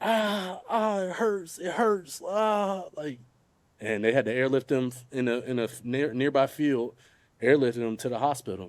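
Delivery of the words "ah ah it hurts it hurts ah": very high, very slow, drawn-out moans and cries of pain. Retelling a recorded 911 call, imitating brother crying out in pain. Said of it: "you can hear my brother in the background like".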